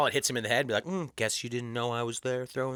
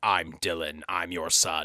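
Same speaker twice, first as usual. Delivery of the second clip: put-on robotic movie killer voice, lower; 7 semitones lower than usual. Acting out walking up to a father for the first time: Terminator voice. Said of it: "walk up like Terminator".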